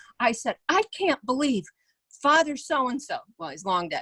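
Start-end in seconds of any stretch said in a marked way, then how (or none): 0.7-3.2 furious, heated, high-pitched, indignant disbelief. Retelling what she said as a child to her father: retelling own furious words. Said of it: "and I was furious".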